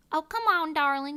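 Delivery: loud, high, put-on Southern accent, Alabama style. Giving examples of american accents: alabama southern accent. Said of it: "Alabama type of, like, Southern accent".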